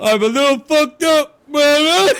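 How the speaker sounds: shrill, very loud, high-pitched shouting. Retelling a scene from the movie Ted, imitating Ted. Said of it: "he goes".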